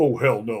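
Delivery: deep voice, dropped way down. Retelling a reply after asking someone to go upstairs: imitating Tony Todd's deep voice. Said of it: "with that deep voice".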